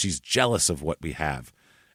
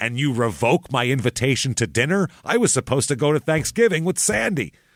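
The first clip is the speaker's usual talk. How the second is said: furious, indignant, pitched-up, wound-up rant; 6 semitones higher than usual. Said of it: "And he is screaming at Penn".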